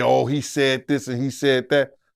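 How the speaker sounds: normal talking voice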